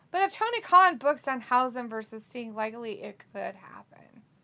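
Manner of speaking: plain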